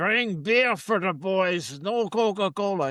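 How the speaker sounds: put-on heavy German-style accent, laid on thick. Speaker quotes what their father once said to their mother: thick Germanic accent. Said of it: "He had this thick Germanic accent".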